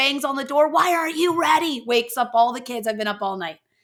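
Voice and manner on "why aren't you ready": mock stressed scolding, pitched up, yelling. Retelling a sister banging on the door: imitating Kelly yelling. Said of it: "She's yelling".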